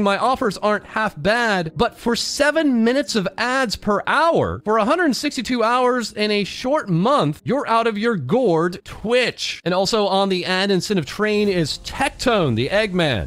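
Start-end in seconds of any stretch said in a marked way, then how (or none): none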